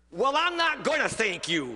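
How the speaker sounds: sneering, scornful, mocking tone. Retelling what a man he was helping said to him, retelling a sneer. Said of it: "he sneered".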